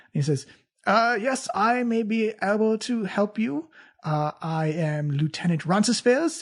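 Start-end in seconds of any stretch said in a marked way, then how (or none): 1.2-6.5 slow, gallant, elegant, fancy courtly nobleman voice. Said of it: "So fancy".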